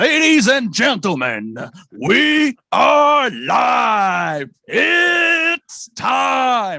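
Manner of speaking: very loud, booming, swooping, drawn-out fight announcer call. Opening the live podcast with a playful UFC announcer call. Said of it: "I like to do my U F C call".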